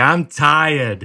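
put-on small child voice with Boston accent. Joking that all toddlers talk this way, imitating a toddler: toddler Boston accent. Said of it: "all toddlers have a Boston accent".

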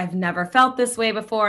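ordinary talk

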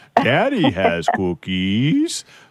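fully hammed puppet monster voice, swooping pitch. Quoting a listener's 1.5-year-old son, in a Cookie Monster voice. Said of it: "your son sounds like the Cookie Monster".

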